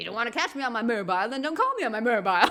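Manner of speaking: put-on, acted woman's voice. Retelling a phone call, the speaker quotes the woman's reply: imitating the woman caller. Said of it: "And she's like".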